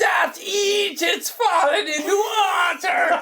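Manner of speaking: very high, slow, laughing mock shout. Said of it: "Richard Harris shouts".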